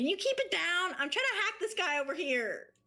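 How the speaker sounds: high, loud hollered yell. Voicing a character who asks a raging player to quiet down: yelling down a hallway. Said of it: "she would yell down the hallway".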